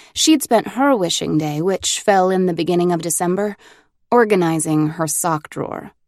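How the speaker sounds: ordinary delivery, nothing marked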